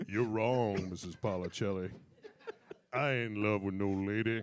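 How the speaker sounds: fake, dropped low, put-on deep voice. Recalling a bit from age twelve: put-on deep voice. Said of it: "deep voice".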